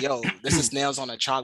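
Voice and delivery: ordinary talk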